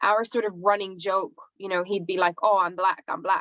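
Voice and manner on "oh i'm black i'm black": put-on thick Spanish accent. Recalling a fellow student's running joke, in his thick Spanish accent. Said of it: "in his thick, you know, Spanish accent".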